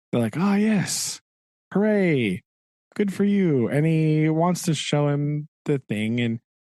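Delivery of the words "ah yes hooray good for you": acted, very pleased, high, drawn-out cheer. Retelling a scene where both characters are very pleased: imitating very pleased characters. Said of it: "they're both just, like, very pleased".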